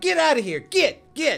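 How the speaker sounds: in-character yelling. Voicing a character casting Turn Undead at skeletons: character yelling. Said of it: "he just yells".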